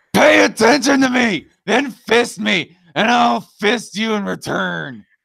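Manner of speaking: acted, furious, high, harsh, rasping shout. Reading a chat message aloud: angry Cult of Ham impression. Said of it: "my best angry Cult of Ham impression".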